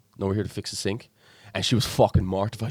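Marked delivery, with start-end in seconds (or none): 0.2-1.1 acted dry, expressionless, flat deadpan delivery. Retelling answering a hen party at the door: retelling a deadpan reply. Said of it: "just deadpan".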